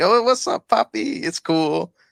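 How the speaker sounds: put-on Mexican accent, very high-pitched. Discussing which accents are okay to do, speaker shows a mock Mexican accent. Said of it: "you do Mexican".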